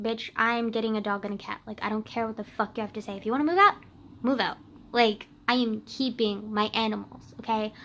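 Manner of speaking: normal talking voice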